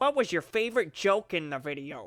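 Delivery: goofy, swooping, hammed-up cartoon dad voice. Closing out a video, asking about favorite jokes, Peter Griffin voice. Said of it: "Why did I put my Peter Griffin voice on?".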